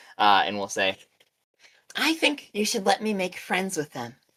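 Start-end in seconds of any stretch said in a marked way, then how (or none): 2.0-4.2 exaggerated sugary cutesy little-creature voice, pitched up. Voicing a small creature speaking through a rock image: over-the-top cutesy voice. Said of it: "over-the-top cutesy voice".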